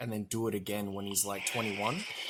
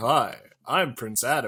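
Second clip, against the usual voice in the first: very loud, belted-out, showy delivery; 2 semitones higher, 10 dB louder than usual. Retelling how the cartoon sounded, imitating Prince Adam. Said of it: "when he was Prince Adam, he's like".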